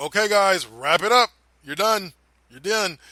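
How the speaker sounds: short, loud, sharp delivery.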